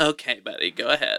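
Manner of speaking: talking-down, patronizing, condescending tone. Retelling how a driver waved a pedestrian on: imitating a condescending driver. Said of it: "really condescending".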